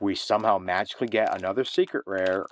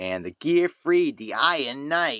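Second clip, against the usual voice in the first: put-on poor Brooklyn accent, higher pitch; 5 semitones higher than usual. Announcing the cards pulled, in a bad Joey impression. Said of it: "That's my Joey impression".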